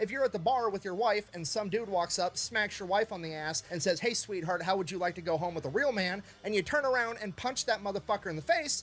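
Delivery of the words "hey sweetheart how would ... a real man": plain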